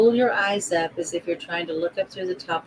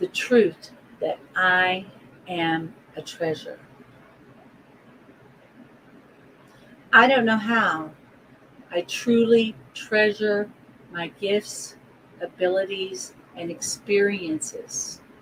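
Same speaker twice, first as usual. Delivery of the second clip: slow, easy-to-follow speech. Leading listeners through affirmations to repeat along: slow enough to follow along. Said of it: "I'll say this slow enough that you can follow along".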